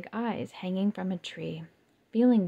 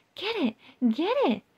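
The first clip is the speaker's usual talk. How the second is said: squeaky, very high, excited squealing; 10 semitones higher, 4 dB louder than usual. Narrator voicing the princess spider urging her partner to catch a fly, excited squeal. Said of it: "the princess spider squealed".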